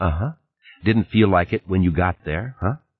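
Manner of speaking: plain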